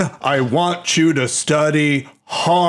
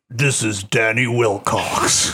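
low, put-on demon character voice; 4 semitones lower than usual. Asking a performer whether they use a special porn voice, demon voice. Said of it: "you don't use like a demon voice".

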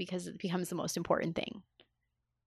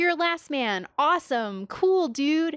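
high, loud, excited gushing. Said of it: "everyone that he encounters is either like".

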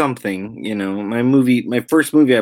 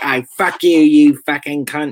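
loud, put-on Cockney accent, laid on thick; 4 semitones higher, 5 dB louder than usual. Retelling how far they took their Cockney lessons at ten, thick Cockney accent. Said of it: "really Cockney".

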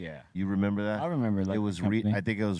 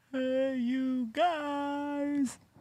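imitated scream. Imitating the scream that began the show: imitating the show's opening scream. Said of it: "the beginning of the show was with that scream".

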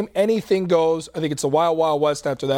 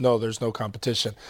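mock deadpan, much lower and quieter; 7 semitones lower, 6 dB quieter than usual. A commentator quotes Mike Glennon answering questions, imitating Mike Glennon's deadpan. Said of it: "very deadpan".

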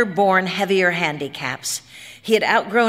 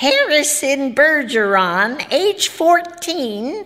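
high, squawking grackle-like sound; 7 semitones higher, 3 dB louder than usual. Narrator reading a ballerina announcing a news bulletin, grackle squawk. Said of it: "said the ballerina, ... she said in a grackle squawk".

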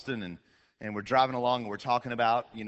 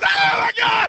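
piercing, shrill, full-throated shriek, very loud; 11 dB louder than usual. Retelling braking suddenly while a passenger sleeps: imitating own scream. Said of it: "do the break and scream".

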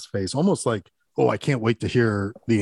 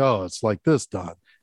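put-on deflated tone. Retelling a film scene, repeating a line back as Don: imitating deflated Don. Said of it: "it deflates him".

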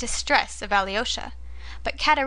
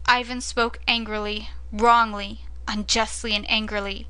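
plain reading voice

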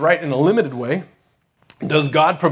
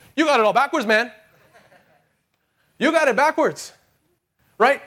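put-on pitched-up South American accent; 9 semitones higher than usual. A speaker quotes his father's reply, dad's South American accent. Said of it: "so here comes the accent".

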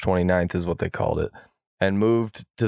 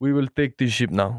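attempted Israeli accent; 4 semitones higher than usual. Joking about how to seize a big ship, the speaker tries a put-on Israeli accent. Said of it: "Can you do Israel accent?".

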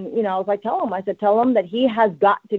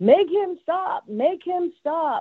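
put-on very high, stretched-out screaming child voice; 9 semitones higher than usual. Retelling what a five-year-old in the car said: imitating a child screaming.

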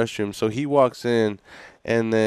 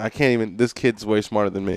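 ordinary talk

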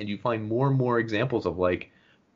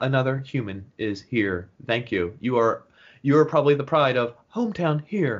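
robotic woman's voice; 2 semitones higher than usual. Describing the game's voice guiding players through puzzle tests: robotic GLaDOS voice. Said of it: "it's a robotic woman voice".

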